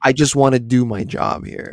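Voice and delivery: put-on dry sarcastic voice. Describing how Erica talks in the show: imitating Erica's dry sarcasm. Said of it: "she's got that dry sarcasm where she's just like".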